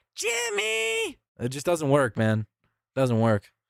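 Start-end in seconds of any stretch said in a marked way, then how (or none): 0.2-1.2 very high, creaky, rough voice, name drawn out. Answering a chat request, attempting a Carl Wheezer impression. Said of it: "I can't do Jimmy".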